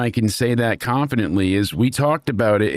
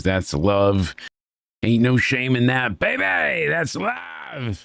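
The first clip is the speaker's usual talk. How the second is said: put-on whiny, swooping wrestler voice. Quote what he says as the crowd erupts at an embrace, in a put-on whiny voice. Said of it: "You gotta get the the whiny ah, voice going on".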